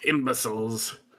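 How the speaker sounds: one word hissed with strong sibilance. Voicing a frog character who looks at the players: hissing. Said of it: "hisses, like".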